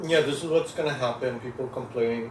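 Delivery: ordinary delivery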